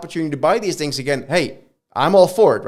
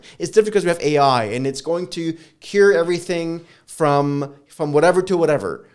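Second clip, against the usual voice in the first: ordinary delivery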